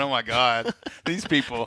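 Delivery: play-acted helpless laughter, close to tears. Retelling reading community responses at the kitchen counter: retelling own laughter to tears. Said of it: "almost in tears going".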